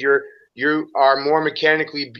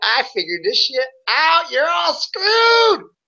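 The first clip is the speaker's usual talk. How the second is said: put-on acted very high, swooping little-kid giggling; 13 semitones higher than usual. Retelling their reaction to cracking a riddle, acting out giggling like a kid. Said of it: "I'm giggling like a little kid".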